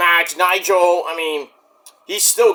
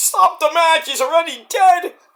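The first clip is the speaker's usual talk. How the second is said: very high, pleading, begging voice; 11 semitones higher than usual. Retelling a match moment: imitating Tony Baloney begging for mercy. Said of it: "begging for mercy".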